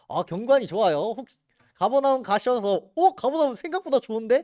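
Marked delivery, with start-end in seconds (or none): 2.9-4.4 high, pleasantly surprised exclamation. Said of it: "라고 놀라셔도".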